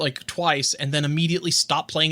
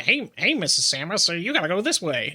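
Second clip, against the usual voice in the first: irritating, annoying nerdy character voice. Imagining a codec call giving directions in a game: annoying nerd guy voice. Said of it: "the annoying nerd guy on the phone".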